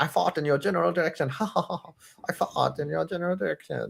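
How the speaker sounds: rough, creaky, rasping cartoon voice with laughs between. Quoting a South Park cartoon line: Terrence and Phillip voice. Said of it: "And then they had Terrence and Phillip".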